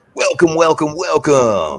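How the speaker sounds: put-on showy radio announcer voice, high pitch. Greeting everyone tonight, welcome said in a radio announcer voice. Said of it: "Here's my radio voice".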